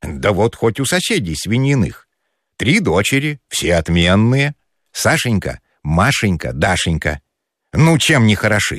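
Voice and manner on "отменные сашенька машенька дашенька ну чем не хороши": ordinary delivery, nothing marked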